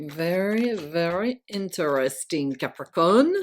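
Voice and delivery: put-on French accent. Starting a tarot card reading for Capricorn: put-on French accent. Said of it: "That's my French accent".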